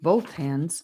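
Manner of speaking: ordinary delivery, nothing marked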